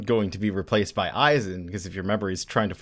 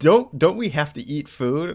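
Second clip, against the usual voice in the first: usual speaking voice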